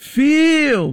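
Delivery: emphatic stress on 'feel'. Speaker tells listeners they may feel unable to witness; stress on 'feel'. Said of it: "Notice I'm putting emphasis on the feel".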